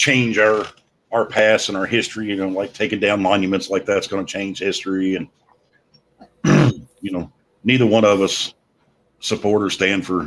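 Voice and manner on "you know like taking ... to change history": ordinary talk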